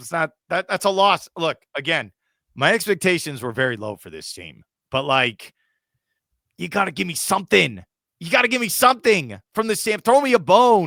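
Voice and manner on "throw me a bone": hammed-up villain voice, high and loud. Wanting more from the team, the speaker demands something: Doctor Evil voice. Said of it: "I know I sound like Doctor Evil".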